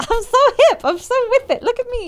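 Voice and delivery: put-on very high, cool and casual old woman voice. Joking about feeling hip, imitating a grandma acting hip. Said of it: "one of those grandmas that's like".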